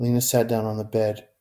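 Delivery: plain reading voice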